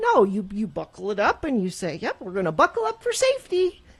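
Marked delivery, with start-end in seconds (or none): 2.0-3.7 upbeat, chipper, cheerful sing-song voice, pitched high. Speaker showing how to answer complaints about wearing a seatbelt, cheery voice. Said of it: "you have a cheery voice about it".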